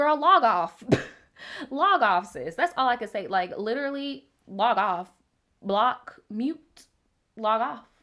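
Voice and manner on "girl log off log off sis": brash put-on celebrity voice, loud, high and swooping.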